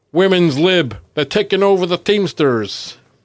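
put-on American accent. Retelling what a man said as a woman arrives, in his American accent. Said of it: "in his American accent".

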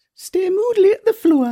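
put-on Geordie accent. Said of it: "for me to do my Geordie".

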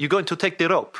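poor put-on Polish accent. Retelling a story, voicing a policeman on the phone in a bad Polish accent. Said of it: "I'm going to do a bad Polish accent now".

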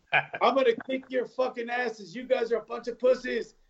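mock high-pitched drill sergeant yell. Retelling how drill sergeants greeted recruits off the bus: imitating drill sergeants yelling. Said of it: "they're yelling".

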